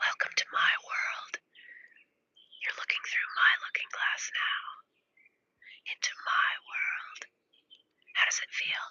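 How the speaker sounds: soft ASMR-style whispering. Speaking to a viewer looking at their screen, doing asmr whispering. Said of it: "I'll do a little A S M R whispering".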